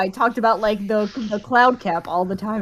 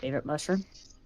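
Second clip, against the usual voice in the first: very quiet, muttered under the breath; 6 semitones lower, 12 dB quieter than usual. Asking a character's mother a question on the quiet: very quietly under breath. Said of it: "very quietly under my breath".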